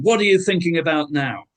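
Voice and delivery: mock high-pitched sudden shouting. Recounting how she barged into the room and shouted at the speaker, imitating someone shouting. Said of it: "just shouted at me".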